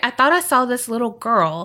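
ordinary delivery

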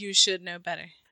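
mock deadpan delivery. Imagining how the husband in the story answered: imitating a deadpan reply. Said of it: "he's very deadpan".

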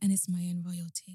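mock mellow, laid-back tone. Teasing a co-host by repeating their intro line, mimicking a mellow voice. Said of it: "You're like".

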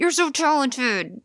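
cross, angry tone, pitched high. Acting out someone's compliments said in a very angry tone, mock-angry tone. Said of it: "frowny face".

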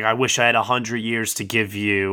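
ordinary delivery

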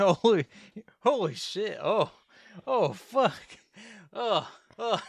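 very slow, out of breath, gasping, high. Acting out a shocked cop in the film: imitating an out-of-breath cop. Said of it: "He's so out of breath".

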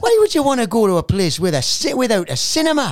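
put-on butchered Geordie accent, very high, very loud. Retelling what a uni friend said: bad Geordie accent. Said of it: "I'm gonna bu-, butcher his accent".

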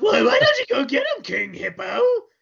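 very high, shrill, rough, grating cartoon villain voice. Reminiscing about Captain N, speaker quotes the villain in a Mother Brain voice. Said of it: "Mother Brain had that annoying ass voice".

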